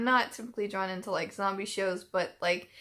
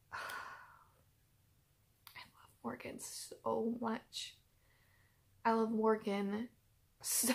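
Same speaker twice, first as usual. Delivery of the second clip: soft, choked-up voice on the verge of crying; 2 semitones higher, 8 dB quieter than usual. Speaker talking about Morgan and Tyrese, on the verge of tears. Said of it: "I'm gonna cry".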